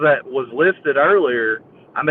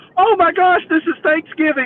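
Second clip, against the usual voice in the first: put-on excited dog voice, higher; 14 semitones higher than usual. Voicing a dog eating toenails off the floor: imitating an excited dog. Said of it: "he gets so excited".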